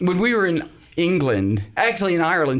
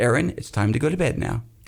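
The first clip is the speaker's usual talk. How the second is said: low, soothing, gentle calling voice. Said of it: "Let me hear you say".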